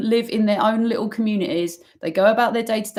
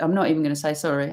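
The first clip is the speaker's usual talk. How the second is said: ordinary talk, nothing marked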